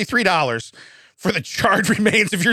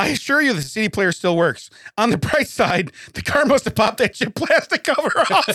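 words breaking up with helpless laughter; 3 semitones higher than usual. Showing listeners a picture and explaining it, laughing uncontrollably. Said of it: "I can't stop laughing".

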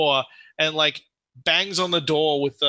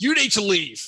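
high-pitched calling out; 5 semitones higher than usual. Voicing the Durgan banging on the door with a pike: yelling. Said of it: "bangs on the door and then yells".

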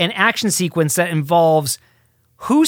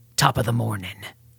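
grave, very low, solemn, deadpan and deep voice; 8 semitones lower, 7 dB quieter than usual. Quoting a movie line from a fairy character: serious Judi Dench delivery. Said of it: "delivered as serious as that".

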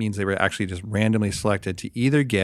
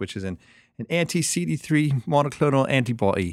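fake British accent, higher; 5 semitones higher than usual. Explaining what a drug is, in a put-on British accent. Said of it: "Do you like my British accent?".

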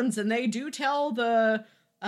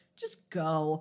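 mock fed-up, unimpressed, exasperated, dismissive tone; 7 semitones lower, 4 dB quieter than usual. Retelling a helmeted character's answer to a kiss request: imitating an eye-roll tone. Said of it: "you can hear the eye roll in her voice".

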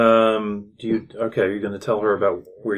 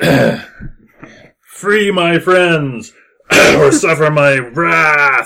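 ringing voice, higher and louder; 7 semitones higher, 10 dB louder than usual. Voicing a spirit that announces itself to the players: voice ringing out. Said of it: "a voice that rings out and says".

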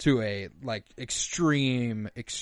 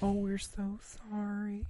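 very high, soft, fake polite voice; 9 semitones higher, 8 dB quieter than usual. Retelling how two people apologized, in a fake polite voice. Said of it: "they strike up that fake voice that you've heard every person ever do to be a little polite".

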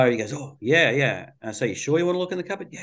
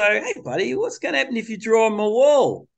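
put-on high, playful voice as for a child; 8 semitones higher than usual. A parent shows the voice they use with a kid: playful voice. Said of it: "I'm going to use my playful voice".

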